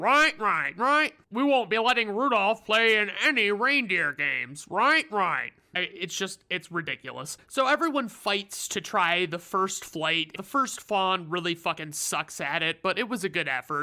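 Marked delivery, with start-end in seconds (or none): 0.0-5.5 big, grand put-on voice. Retelling the reindeer coach organizing flying lessons: Coach Comet voice. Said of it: "he has an awesome voice".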